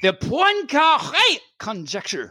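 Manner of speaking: mock German accent. Listing famous math problems, read this one's name in a mock german accent. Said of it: "I just kind of read it in a German".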